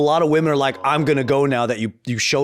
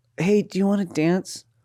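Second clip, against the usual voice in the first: timid, shy, trembling, shaky, high voice; 5 semitones higher than usual. Acting out a shy dancer asking for a dance, imitating a shy, shaky girl. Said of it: "She's really shy. She's a little shaky".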